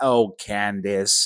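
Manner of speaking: put-on disappointed old woman voice. Imitating Sneeko saying a name: Sneeko impression as disappointed grandma. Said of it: "He sounds like a disappointed grandma".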